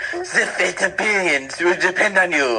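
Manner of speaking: accent shifting from French to Japanese. Doing a dramatic line for the group, accent going french to japanese. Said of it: "started off French and uh, ended like Japanese".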